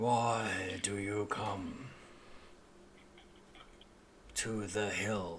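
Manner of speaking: very low, soft, grumbling talking-tree voice. Narrator voicing the willow trees as the party walks up; very low, grumbling voice. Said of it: "they speak in a very low, grumbling voice".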